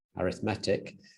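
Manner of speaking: arithmetic pronounced with stress on the E, adjective style. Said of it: "you put the emphasis on the E".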